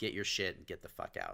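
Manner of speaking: mock furious outburst. Retelling being told to hand over the keys to the shop: imitating a furious person. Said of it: "and he was furious".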